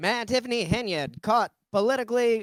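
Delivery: put-on old-timey newsreel announcer. Showing the preferred alternative to a fake news voice: old-timey news voice. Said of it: "just do the the old old timey".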